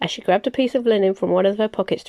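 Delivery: plain reading voice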